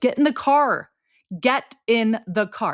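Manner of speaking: bossy parent voice. Acting out a parent hurrying a kid into the car: imitating a parent shouting at a kid. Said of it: "I can act that out because that is very comfortable in my mouth".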